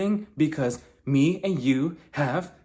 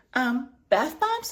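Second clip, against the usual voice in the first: mock-confused tone, pitched much higher; 9 semitones higher than usual. Retelling a confrontation, acting out Whitney's reply, imitating Whitney confused. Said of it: "Whitney's looking at her like".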